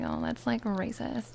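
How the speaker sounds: ordinary talk, nothing marked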